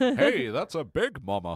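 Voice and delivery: slow, drawling cartoon voice with big pitch swoops. Quoting a line from an episode in an early Homer voice. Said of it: "I'm good at, like, season one, Homer".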